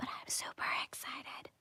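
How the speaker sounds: very soft whispered aside. Telling listeners about faster internet coming to the area, whispering. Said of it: "I needed to whisper that last part".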